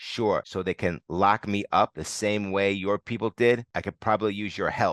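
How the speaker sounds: plain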